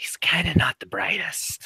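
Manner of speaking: high, hushed, secretive whisper. Voicing a character who leans in close to Jones: whispering. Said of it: "leans in closer to Jones and whispers".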